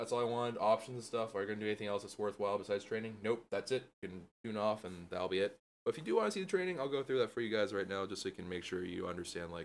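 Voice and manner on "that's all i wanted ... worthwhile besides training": normal talking voice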